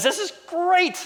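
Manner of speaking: very high, squeaky cartoon voice. Retelling Gideon's words about his army of ten thousand, in a Flounder voice. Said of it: "in the voice of Flounder".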